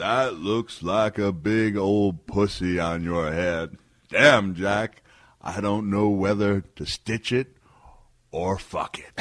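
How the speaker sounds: loud, slow-motion delivery, every word stretched. Repeating the punchline when asked, imitating Robert Bullet in slow motion. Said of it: "let me do it in slow motion".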